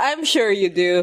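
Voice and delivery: put-on dismissive tone. Discussing a scene, quoting Crowley's reply to Aziraphale: mock-dismissive Crowley line. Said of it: "That's dismissive".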